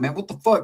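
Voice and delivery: irate, flipped-out angry blow-up. Imitating how other friends would react to a late-night call: imitating someone flipping out. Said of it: "some dudes would've just flipped out like".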